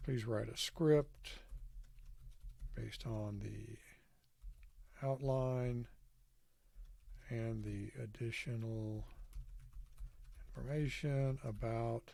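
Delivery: slow, spaced-out dictation voice. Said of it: "and say".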